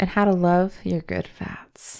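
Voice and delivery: slow, sultry commercial announcer voice.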